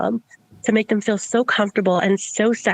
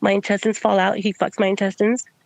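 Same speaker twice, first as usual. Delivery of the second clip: plain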